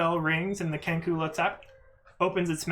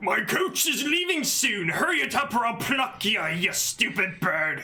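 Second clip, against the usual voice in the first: rough, gruff, half-ogre voice; 4 semitones higher than usual. Narrating a tabletop scene, voicing an annoyed Kenku in a gruff half-ogre voice. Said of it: "in a gruff, seemingly half ogreish voice".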